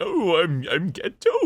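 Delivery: high, very slow whiny whimper, almost sobbing. Showing the voice of the character Gato: whiny Gato voice, sounds like crying. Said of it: "he always kinda sounds like he's crying".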